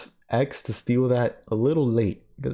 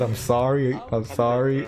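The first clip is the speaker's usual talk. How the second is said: slow, acted speech through laughter. Retelling own words during the game: retelling laughing apology. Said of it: "I'm laughing and I said".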